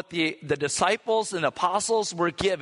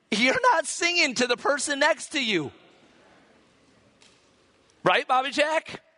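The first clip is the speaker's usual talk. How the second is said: friendly, playful, pitched-up teasing; 8 semitones higher than usual. Speaker teasing Bobby Jack in front of the others, teasing. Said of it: "I'm teasing him".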